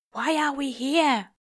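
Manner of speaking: low, quiet whisper. Reading a story aloud, a character asks a question: low whisper. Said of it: "asks in a low whisper".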